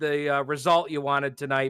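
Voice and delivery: ordinary talk, nothing marked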